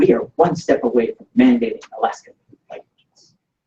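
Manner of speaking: heavily theatrical, really dramatic voice. Recounting a debate, the speaker reenacts what he said: reenacting a really dramatic voice. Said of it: "in a really dramatic voice, which I'll reenact".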